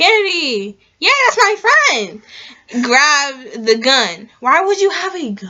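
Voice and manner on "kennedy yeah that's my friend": high, loud, called-out line. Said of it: "And said very loudly".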